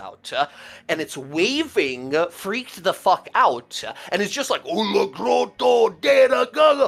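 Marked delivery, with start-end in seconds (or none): 4.7-6.9 two-headed troll voice, high, rough, hollering gibberish. Narrating to players as a two-headed troll rushes out, troll yelling gibberish. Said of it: "He's yelling".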